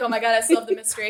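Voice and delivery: mock proud, smug, self-satisfied boasting tone. Retelling a character solving a mystery: imitating someone proud of himself. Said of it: "So proud of himself for getting it".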